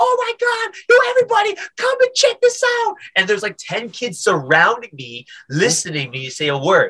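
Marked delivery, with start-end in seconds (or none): 0.0-2.9 very high, excited, thrilled calling voice. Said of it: "And then he was like".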